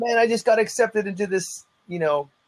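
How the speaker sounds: high, proud put-on voice.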